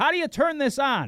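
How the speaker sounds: very loud, very high, shrill, drawn-out yell. Describing a woman at the gym treadmill who interrupts: retelling a woman's yell. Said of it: "She just starts yelling".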